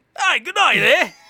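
put-on shrill, booming, loud, high South African accent. Asked to do South African while showing off accents: attempted South African accent. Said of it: "do South South African".

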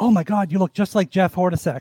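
ordinary talk

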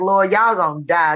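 ordinary talk, nothing marked

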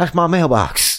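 very bad fake Deep South promo-announcer accent. Mocking how a man sounded talking to someone, bad Deep South accent. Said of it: "like the worst Deep South fucking promo".

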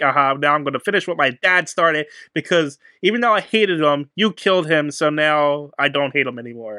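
normal talking voice

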